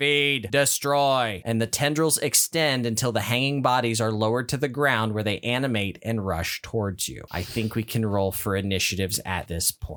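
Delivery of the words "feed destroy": utterly alien, otherworldly crying voice. Narrating a game scene, an alien voice in the players' heads shouting. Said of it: "an utterly alien voice in your head shouts".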